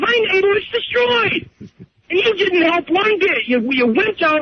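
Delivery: upset, voice pushed very high. Told he sounds upset, the speaker confronts the other person for not helping, upset. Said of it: "You're damn right I'm upset".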